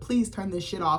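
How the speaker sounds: ordinary delivery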